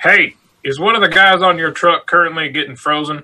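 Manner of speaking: high, called-out voice across a distance. Playing a character who steps forward, yelling at the wagon: yelling in character. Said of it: "just starts yelling".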